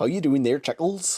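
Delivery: rural West Country accent, Cornwall and Devon. Explaining British regional accents, imitating a West Country farmer accent. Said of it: "they all talk like this there".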